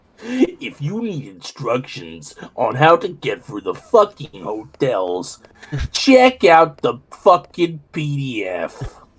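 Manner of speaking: very slow cartoon cat voice, drawn out, swooping pitch. Doing a sound test for another player: Garfield voice. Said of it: "You just sound like that one Garfield voice".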